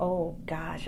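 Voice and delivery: ordinary talk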